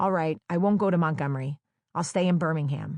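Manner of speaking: plain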